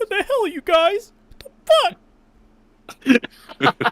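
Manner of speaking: put-on shrill whiny teenager voice, very high, full volume. Imagining a fan dub with everyone else voiced normally: Aqua as a whiny teenager. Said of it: "Aqua has to sound like a whiny little teenager".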